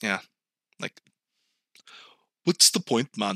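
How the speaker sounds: put-on Ethiopian accent. Imagining how jaded people would talk, speak in a put-on Ethiopian accent. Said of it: "That's my Ethiopian. I don't even know what that accent was".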